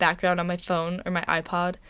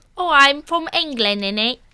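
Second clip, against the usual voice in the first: put-on Cockney accent, higher; 8 semitones higher, 8 dB louder than usual. Recalling a trip to England and asked to do it: Cockney accent. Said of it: "do your Cockney accent".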